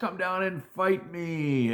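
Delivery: loud taunting yell.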